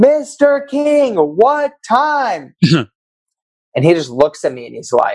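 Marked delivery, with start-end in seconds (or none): 0.0-2.5 play-acted very high, slow, drawn-out hollered shout. Recounting waving at a driver in front of his windshield, retelling a shout.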